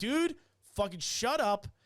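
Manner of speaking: put-on angry outburst. Retelling a confrontation with a man who talked back, retelling an angry outburst. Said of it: "and that's when I lost it".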